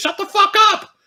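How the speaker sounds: put-on, very high screaming child voice. Telling how a kid reacts to his teasing older brother: retelling a kid's scream. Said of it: "the kid screams at him in Spanish".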